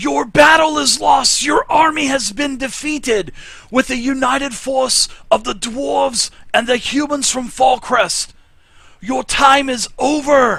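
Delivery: very high-pitched, shrill, loud yell. Game master voicing an elf messenger emerging into the chamber, yelling. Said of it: "and he yells".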